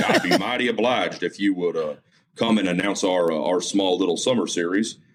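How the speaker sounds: put-on heavy drawling Southern accent. Retelling how a stranger asked him to announce a small summer series, Colonel Sanders-like drawl. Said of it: "I don't want to make him sound like Colonel Sanders".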